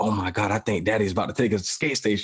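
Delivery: hushed half-whisper. A father retells his kids in the back seat, retelling kids' back-seat half-whisper. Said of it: "I heard them in the back seat whispering".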